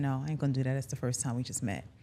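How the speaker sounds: put-on smooth tone. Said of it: "But the smooth tone, he did that".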